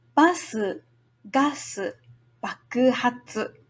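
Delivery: spoken at a slow, unhurried speed. Teaching a tongue twister, the speaker says it the first time at a slow pace. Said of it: "Slowly the first time".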